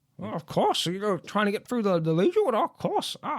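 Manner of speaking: high, swooping lizard-like wizard character voice. Voicing a newt lizard folk wizard greeting a traveler: newt lizard folk wizard voice. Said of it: "a newt lizard folk".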